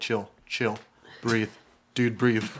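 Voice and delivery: frightened, scared muttering under the breath. Voicing a scared player character calming a pseudo dragon: mumbling to himself in fear. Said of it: "mumbling to yourself".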